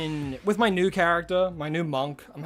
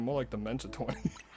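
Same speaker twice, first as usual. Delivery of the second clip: very quiet, low, hushed mutter under the breath; 5 semitones lower, 12 dB quieter than usual. Retelling a friend muttering a joke under his breath: imitating a muttered remark. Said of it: "under his breath".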